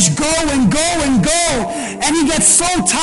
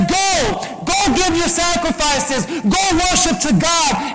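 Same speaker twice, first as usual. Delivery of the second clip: ordinary delivery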